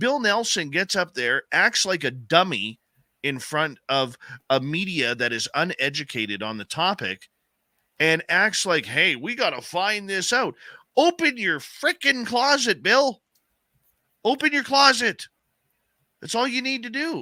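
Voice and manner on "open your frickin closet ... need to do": very high-pitched, passionate, impassioned outburst. Speaker addresses a man he criticizes for acting dumb before the media, passionate. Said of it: "I know you can hear the passion in my voice".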